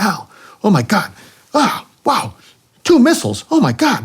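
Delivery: put-on thick, animated, excited Puerto Rican accent, very high. Retelling what his wingman said, imitating Willie, excited, thick accent. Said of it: "very thick accent when he gets excited".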